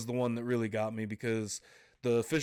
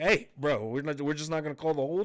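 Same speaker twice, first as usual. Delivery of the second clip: raised, higher yelling; 4 semitones higher than usual. Recalling jumping up when a hold went uncalled on third down; retelling a yell. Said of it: "jumping up and yelling like".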